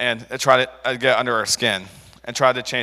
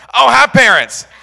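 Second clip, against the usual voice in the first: flustered, loud, panicked blurt pitched way up; 12 semitones higher, 11 dB louder than usual. Retelling answering a woman who asked where his parents were, imitating a panicked blurt. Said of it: "And I panicked and went".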